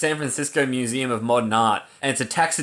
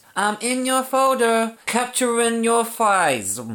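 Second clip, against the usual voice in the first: sweet, very high-pitched, cute little voice; 9 semitones higher than usual. Reading a message aloud after being told to try saying it in a cute voice. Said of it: "Try and say it in a cute voice".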